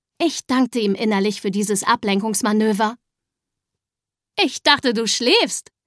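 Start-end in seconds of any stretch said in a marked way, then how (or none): 4.4-5.6 words spoken through laughter. A woman turning to a cat in a green armchair, laughing. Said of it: "sagte Frau Eule lachend".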